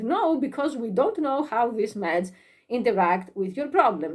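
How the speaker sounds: ordinary delivery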